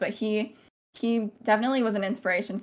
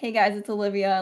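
mock mocking, taunting tone. Retelling how classmates greeted them when walking by: imitating classmates mocking. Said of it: "kinda just mocking what I said in my video".

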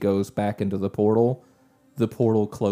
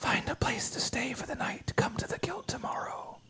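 hushed, private whisper; 11 dB quieter than usual. The game master, as Shade, leans over so only one player hears, whispering. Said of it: "leans over. And Griffin, you're the only one that hears her say this".

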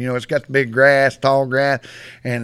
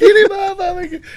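very high, loud, shrieking cry; 5 dB louder than usual. Speaker retelling a tough guy screaming to be freed, retelling a high scream. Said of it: "he screamed like a woman".

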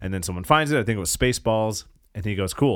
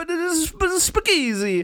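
put-on Italian-accented comedian voice, pitched higher. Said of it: "kind of like an Italian Bill Cosby".

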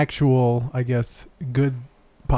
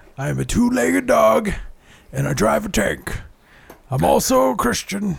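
rough, raspy, high, rambling broadcaster-style rant; 8 semitones higher than usual. Doing a mashup of a ranting host: Alex Jones impression. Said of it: "I'm doing my best Alec Jones mashup".

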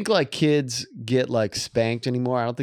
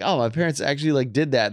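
normal talking voice

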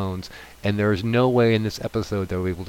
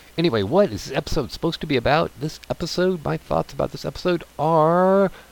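rushed, rattled-off talk, pitched a bit high; 7 semitones higher than usual. Podcast host turning to what this episode is about, talking too fast. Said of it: "And I'm talking too fast".

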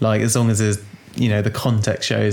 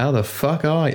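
put-on, mock Australian accent; 5 semitones higher than usual. Joking about how australian kids greet grandparents, in a put-on australian accent. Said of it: "I used to have a really good Australian accent".

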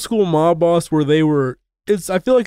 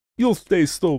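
put-on Russian accent; 4 dB quieter than usual. Quoting a man's line from a scene, slipping into a russian accent. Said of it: "I did a Russian accent there".

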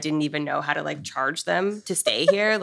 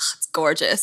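mock-annoyed, irritated woman's voice. Retelling how a passing woman reacted to the bought property, imitating her annoyance. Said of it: "she was so mad".

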